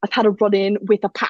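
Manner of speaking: put-on British accent, poorly done. Retelling what he told his security on the phone, in an attempted British accent. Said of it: "I can't do a British accent".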